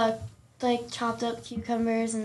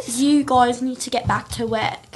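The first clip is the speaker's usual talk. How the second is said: put-on British chef voice, louder; 5 dB louder than usual. Imitating a TV chef telling people to get back to work: Gordon Ramsay impression. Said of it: "He was like".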